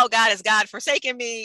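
tongue-in-cheek, facetious put-on lament of despair and anguish. Voicing what people think in hard times: facetious mock despair. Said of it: "I'm being sort of facetious".

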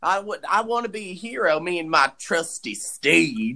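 put-on country accent. Retelling what a man said after picking people up, the speaker uses a country accent. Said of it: "the country accent".

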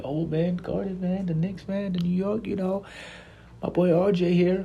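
very high, giddy, gushing voice.

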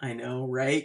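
usual speaking voice

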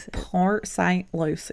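slow, drawn-out country accent. Asked to say Port St. Lucie in a slow country accent. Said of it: "Say it in a country accent".

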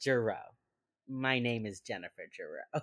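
mock flat deadpan delivery. Recounting a scene where a man answers the door, imitating Jennifer Jarrow's deadpan. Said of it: "She is so like deadpan Jarrow".

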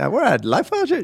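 peppy, eager, high little cheerleader voice. Teasing a co-host for sounding like a little cheerleader: imitating an eager little cheerleader. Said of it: "You just put your hands out like".

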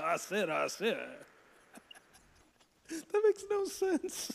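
high, swooping cartoon rooster voice, opening word doubled. Slipping into a cartoon character voice while chatting: Foghorn Leghorn impression. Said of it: "I don't know why I made him sound like".

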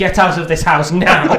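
loud, high-pitched mock outrage, bellowed.

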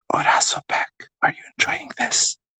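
soft, close ASMR whisper.

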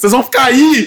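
loud, high-pitched shout. Retelling the neighbour calling down to people stuck in the elevator: imitating a man yelling. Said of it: "Aí o cara gritou".

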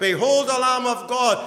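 high, loud crying out.

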